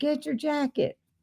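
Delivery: put-on near yell. Retelling watching a video, imitating almost yelling at the tv. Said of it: "I'm almost yelling at the T V".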